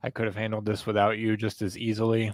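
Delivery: ordinary delivery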